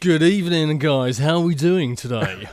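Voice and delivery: loud, put-on radio announcer voice. Podcast guest greeting the hosts in a put-on radio voice. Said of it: "I'd put on my radio out, my radio voice today".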